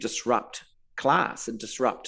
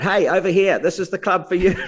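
high-pitched loud yelling; 8 semitones higher, 8 dB louder than usual. Retelling what a man called out to the speaker, retelling a yell. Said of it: "he's just yelled out".

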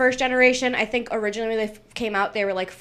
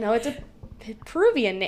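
plain

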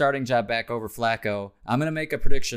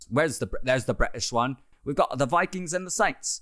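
put-on British London accent. Speaker switches into an accent mid-segment, put-on London accent. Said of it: "Let me get the London one going".

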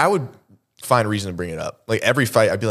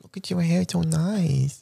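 put-on high, creaky baby talk, nice stretched out; 7 semitones higher, 4 dB quieter than usual. Asking another speaker if he uses baby talk with Tara, then showing it: baby talk. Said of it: "Do you ever say it in baby talk to her?".

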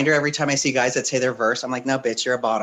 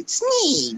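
very high-pitched puppet voice. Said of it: "like a Jim Henson puppet".

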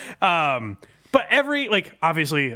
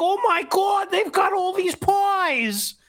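very high, slow voice, "pies" drawn out. Mocking a man-on-the-street segment, the speaker does an Opie impression. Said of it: "he's doing his voice where he's like".

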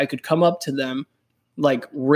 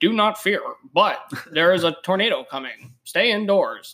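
put-on robotic, mechanical announcer voice; 4 semitones higher than usual. Retelling a tornado alert heard on the radio, in a robotic announcer voice. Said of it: "this robotic sounding man that was just like".

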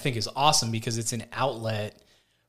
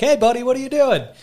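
very high, very loud, cheerful happy-dude voice; 12 semitones higher, 9 dB louder than usual. Retelling his dad's phone call about a patio project, imitating his cheerful dad. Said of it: "he's such a happy dude".

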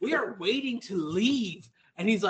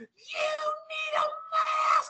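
put-on screeching woman's voice, higher. Retelling being chased down at a store entrance: imitating a screeching lady. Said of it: "screeching sixty-year-old lady".

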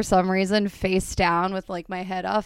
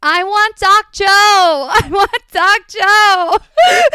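put-on very high, very slow, drawn-out, childish wailing scream; 13 semitones higher, 7 dB louder than usual. Retelling splitting their chin as a child and calling for a doctor, retelling a childhood scream. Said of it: "but I kept screaming".

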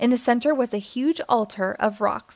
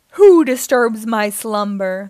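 booming, loud, thundering roar of a giant beast; 8 dB louder than usual. The tiger head at the cave entrance challenges the arrivals, thundering. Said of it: "the tiger head thundered".

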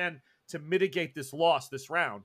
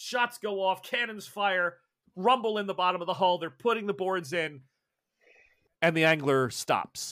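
ordinary talk, nothing marked

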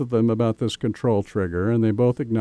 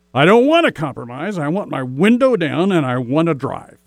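acted loud, raised voice, pitched up; 6 semitones higher, 5 dB louder than usual. Speaker retelling what she said when a compromise was suggested, retelling her raised voice. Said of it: "with a raised voice and says".

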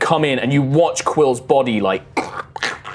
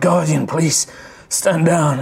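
weak, feeble, half-hearted ghostly voice; 3 semitones higher than usual. Voicing a ghost weakly commanding a guardian to stand down: weakly commanding ghost voice. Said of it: "he's weakly trying to command it to stand down".

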